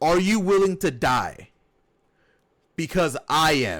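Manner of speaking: ordinary delivery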